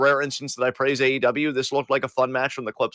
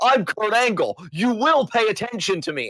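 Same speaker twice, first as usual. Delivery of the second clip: high, insistent, attention-demanding declaration; 7 semitones higher than usual. Retelling a wrestling segment, imitating Kurt Angle. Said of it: "he's like".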